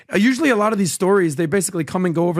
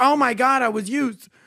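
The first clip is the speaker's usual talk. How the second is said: mocking, high, drawn-out whining voice; 5 semitones higher than usual. Mocking donors who regret losing: mocking imitation of a donor. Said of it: "you're like".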